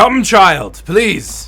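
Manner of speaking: very loud, high-pitched calling. As narrator, voice a man waving the players in, loud voice. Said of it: "That was very loud for now".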